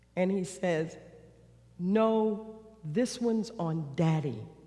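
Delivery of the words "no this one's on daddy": imitated slow-talking old man voice. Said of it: "like my dad kind of character, slow, slow".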